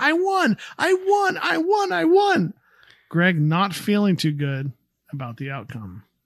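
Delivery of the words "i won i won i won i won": very high, very slow, drawn-out excited scream. Recapping a show scene where one character beats another, retelling an excited scream. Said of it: "jumps up and down and screams".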